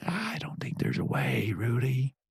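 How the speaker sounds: menacing, low, soft whisper.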